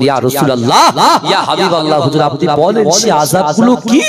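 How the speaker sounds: usual speaking voice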